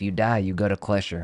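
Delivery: put-on Texas accent. Trying out a texas accent on a phrase while time runs down. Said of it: "I do feel like a Texas accent is".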